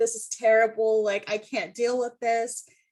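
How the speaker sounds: imitated crying, tearful voice. Retelling crying to friends about the situation: imitating own crying. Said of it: "crying to my friends".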